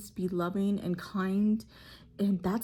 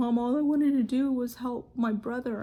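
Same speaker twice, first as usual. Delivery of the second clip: put-on crying, tearful, sad, pleading little boy voice; 4 semitones higher, 4 dB louder than usual. Retelling what a sad, crying son said to his mom: imitating a crying child. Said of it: "sad and he's crying".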